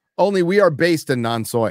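ordinary delivery

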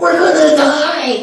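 mock shrill terrified cry, pitched way up. Retelling the scared disciples in the storm: imitating the disciples yelling. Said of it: "the disciples are yelling".

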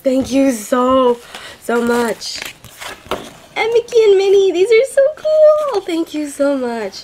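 squeaky, excited, high, swooping voice. Thanking someone on camera for postcards and gifts, excited high-pitched voice. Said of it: "my voice is going all high-pitched".

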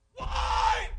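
put-on very high, shrill yell. Retelling walking down the church aisle after a baby died: retelling own yelling. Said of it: "and I was yelling".

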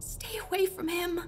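very soft, very quiet, high-pitched half-whisper. A woman speaks to the narrator while the narrator's mother sleeps, half-whispered. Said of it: "Madame Green whispered".

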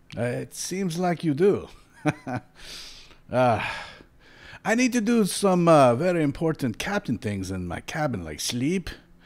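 put-on drunken captain voice. Voicing a ship captain who stumbles onto the deck with wine, stumbling wine-drinking captain voice.

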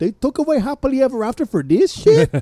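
put-on, very high, heavy, thick Spanish accent. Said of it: "she had a very thick accent".

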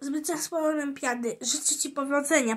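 ordinary delivery

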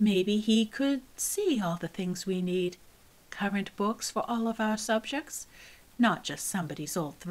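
ordinary delivery

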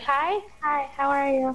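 put-on high, girlish voice. Repeating what they said when others asked who was talking: girly voice. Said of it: "I was trying to sound like a girl".

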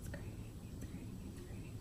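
whispered, very soft.

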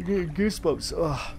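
speaking through a yawn. Reacting to something freaky, a speaker talks while yawning. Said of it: "yawning away here".

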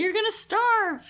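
very high, loud, up-in-arms motherly voice. Retelling how people reacted to a long fast: imitating mom's voice. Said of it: "you were imitating your mom just now".

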